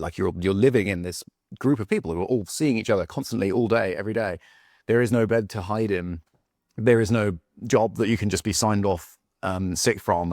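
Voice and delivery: ordinary talk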